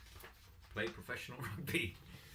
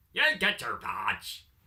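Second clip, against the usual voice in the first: put-on Northern Irish accent, louder; 2 semitones higher, 11 dB louder than usual. Promoting badges by email, the speaker repeats a line in a put-on Northern Irish accent. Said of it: "I don't know why I did an Irish accent".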